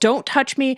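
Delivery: mock defensive half-yell, mild. Retelling a scene where Catra pushes herself away: imitating Catra yelling.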